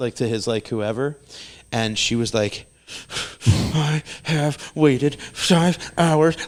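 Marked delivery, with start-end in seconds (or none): 3.5-6.4 put-on, slow, drawn-out, tearful half-whisper through teeth. Retelling the mother pleading with a ballplayer for a photo: imitating a half-whisper-cry. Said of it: "doing that, like, cry, like, whisper cry through, like, her pregnant, you know, teeth".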